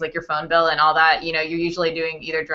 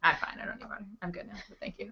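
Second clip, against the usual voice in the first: breathy near-whisper; 4 semitones higher, 15 dB quieter than usual. Speaker reassures the others she is fine, just after choking on spit. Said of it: "I just like choked on spit".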